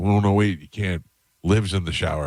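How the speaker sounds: normal talking voice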